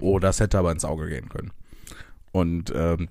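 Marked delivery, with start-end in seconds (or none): 0.0-1.5 low, flat, level, uninflected acted monotone. Speaker acts out how they said it in that situation, retelling in a flat monotone. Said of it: "so relativ monoton einfach".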